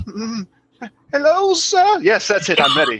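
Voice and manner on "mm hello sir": put-on old crone voice, pitched very high. Warming up a crone voice for a disguise: crone's voice. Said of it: "let me get my crone, crone's voice together".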